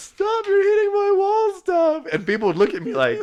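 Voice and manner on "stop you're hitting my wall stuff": very high-pitched laughing scream. Describing your old phone ringtone, redoing it as a high-pitched laugh-scream. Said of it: "in your high pitched voice, you're like laugh screaming".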